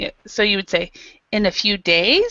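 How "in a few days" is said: rising tune, pitch climbs at the end on days. Showing how a question sentence goes up: rise at the end on days. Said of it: "you have to make the sentence your sentence go up".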